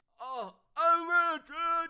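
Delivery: loud, drawn-out delivery, "bitch" missing its ch sound. Mocking how someone flubbed a catchphrase: imitating Elon Musk's flubbed line. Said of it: "He didn't even hit the ch".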